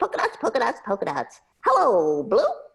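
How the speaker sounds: high, sing-song, bouncy tiny puppet voice. Demonstrating a puppet they built, the speaker does the Polka Dots voice. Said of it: "so his voice was like this".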